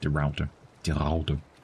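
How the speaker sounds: native Dutch accent pronunciation. Listing dutch specials, repeating a name in a dutch accent. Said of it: "Did I just accidentally do a pretty good Dutch accent?".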